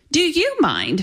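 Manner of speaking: sharp, snappy reply. Jen throws a man's question right back at him, retorting. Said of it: "Jen retorted".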